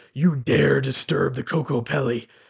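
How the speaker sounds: very deep, rasping creature voice. Speaker retelling what a small creature with a flute said to him, very deep, raspy voice. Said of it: "in this very deep, raspy voice".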